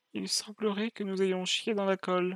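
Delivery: hushed, serene, very calm, unruffled voice. Joking with friends, imagining how the cloners would speak: mock-calm Kaminoan voice. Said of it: "les cloneurs avec leur voix toute calme".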